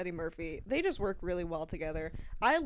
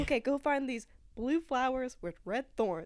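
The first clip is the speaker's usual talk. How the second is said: plain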